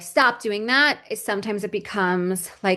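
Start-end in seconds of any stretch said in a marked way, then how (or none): 0.0-1.0 angry, cross parent-like scolding. Showing how a parent scolds a baby throwing a plate: imitating an angry parent. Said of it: "you're getting angry and you're like".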